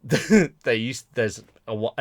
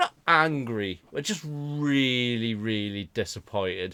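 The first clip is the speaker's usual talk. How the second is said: usual speaking voice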